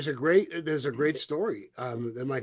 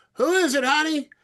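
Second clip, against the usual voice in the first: very loud, shrill, high-pitched call-out; 14 semitones higher, 8 dB louder than usual. Telling a joke, a guy calling from the back: imitating a guy yelling. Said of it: "a guy yell".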